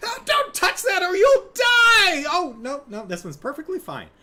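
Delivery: very high, loud, jittery squeak, swinging wildly up and down. Describing the voices of Mario game characters, the speaker demonstrates Toad voice. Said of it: "Toad has that high voice".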